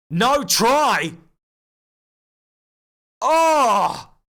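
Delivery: high, loud, shocked outcry of disbelief.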